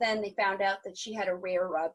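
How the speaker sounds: ordinary delivery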